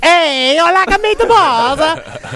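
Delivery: slow, high-pitched yelling.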